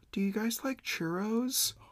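very soft, very high, gentle, hushed little voice. Retelling a voice from the drive-thru window offering churros: imitating a very soft voice. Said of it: "a very soft voice".

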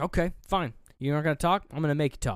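mock, forceful, very aggressive delivery. Retelling a movie scene where a woman demands a doll talk: imitating someone getting aggressive. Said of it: "she gets real, like, aggressive".

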